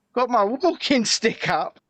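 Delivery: ordinary talk, nothing marked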